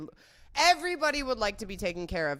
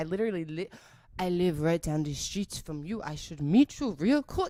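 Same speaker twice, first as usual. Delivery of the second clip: really bad, put-on French accent. Retelling a French guy's message, in a bad French accent. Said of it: "I know that was really bad French accent".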